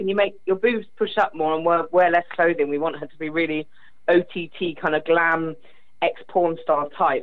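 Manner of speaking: ordinary delivery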